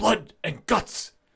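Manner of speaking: high, rough, creaky, inflected call. Imitating a match being announced: William Regal voice. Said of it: "But him going".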